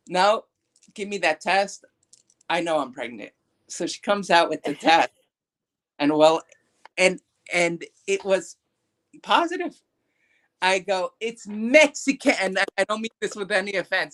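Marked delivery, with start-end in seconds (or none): none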